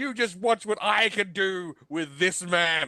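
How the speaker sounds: worked-up, screaming rant. Retelling a man standing on a table about his film, retelling a scream. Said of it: "he stands on the table screaming".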